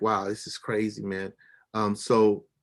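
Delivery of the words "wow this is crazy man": ordinary talk, nothing marked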